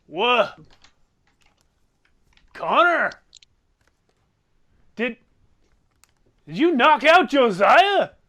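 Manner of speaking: put-on drunk father voice. Storyteller voicing a drunken dad looking over from the kitchen: drunken dad voice. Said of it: "the drunken dad looks over".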